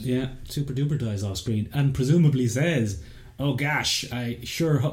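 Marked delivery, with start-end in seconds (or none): 3.4-4.9 slow, fake, laid-on American accent. Imagining a character's last words off screen, put-on American accent. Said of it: "That's my American accent".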